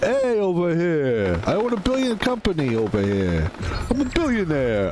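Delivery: put-on New York lowlife voice, slow and swooping. Showing how a billionaire talks in New York: imitating a New York scumbag. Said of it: "talks like a scumbag in New York".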